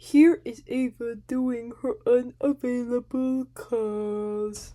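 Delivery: slow cartoon-narrator voice. Introducing uploaded clips of Ava's calls to viewers: SpongeBob narrator voice. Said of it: "Did I sound like the guy from SpongeBob?".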